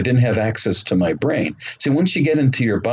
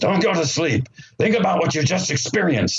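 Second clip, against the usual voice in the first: put-on authoritative, very loud, commanding voice; 8 semitones higher than usual. Retelling what a voice heard inside the body said: imitating a loud commanding voice. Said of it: "It's a very commanding voice".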